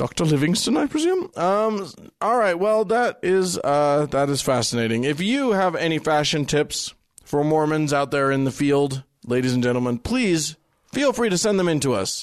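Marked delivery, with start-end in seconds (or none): 0.0-1.3 put-on British accent, pitched up. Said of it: "talk like, like British fellows".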